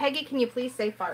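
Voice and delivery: ordinary talk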